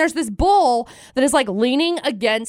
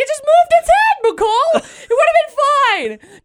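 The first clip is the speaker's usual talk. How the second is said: shrill, squeaky, very high, loud voice; 5 dB louder than usual. Retelling what Dustin said after the bull turned its head, high-pitched Dustin imitation. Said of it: "Dustin didn't obviously talk in that high pitch of voice".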